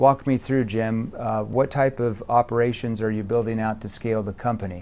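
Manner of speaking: scripted-sounding, low, flat monotone. Sales training example of asking a prospect a question in flat monotone. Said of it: "That sounds like a monotone tone".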